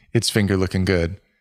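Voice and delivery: normal talking voice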